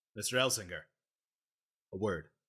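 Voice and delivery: severe, stern, quick delivery. A player, as Eddie, pulls Albrecht aside for a private word: stern voice. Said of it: "in a stern, non-radio voice says".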